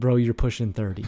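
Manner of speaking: put-on, flat, deadpan voice. Retelling a friend's reply to a joke: imitating Ronnie's deadpan delivery. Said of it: "He just deadpan".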